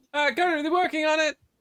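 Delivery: very high, loud call projected from a distance. Voicing someone calling from across the tavern: calling from across the room. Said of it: "the voice comes from the other side of the room".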